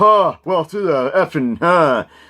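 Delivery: very high, loud, shrill, drawn-out bad mocking voice. Recalling people loudly mocking a film, doing a bad loud mocking impression. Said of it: "that's a bad impression".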